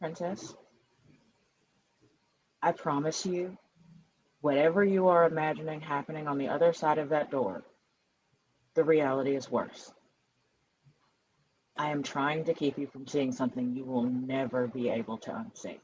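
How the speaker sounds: tender, careful, soft, very gentle voice. Holding the princess's face, keeping her from the door: as gently as possible. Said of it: "just say as gently as I can".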